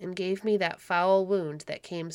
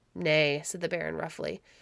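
ordinary delivery

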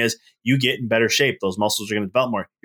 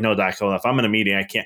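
plain

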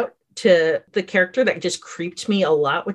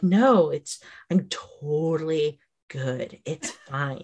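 put-on, mock very calm voice, quieter; 3 semitones lower, 6 dB quieter than usual. Speaker acts out a creepy man covered in blood, imitating someone very calm. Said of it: "when somebody's just very calm".

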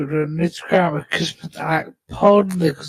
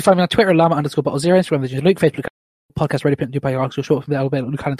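rushed, very fast delivery, much faster. Trying the sign-off as fast as he can first: as fast as possible. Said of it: "I'll do it as fast as I can first".

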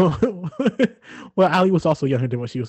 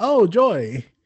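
mock forced delight audibly covering shock; 4 semitones higher than usual. Reinterpreting the greeting as surprise masked with joy: imitating masked surprise. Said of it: "more surprise masked with".

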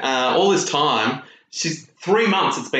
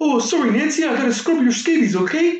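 very high-pitched, put-on Canadian accent; 12 semitones higher than usual. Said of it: "but you went".

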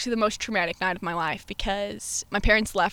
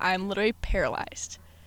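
plain

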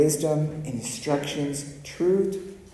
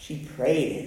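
thick, very Texan accent. Speaker explaining what Mary did with her confusion, in a Texan accent. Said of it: "I sounded very Texan just then".

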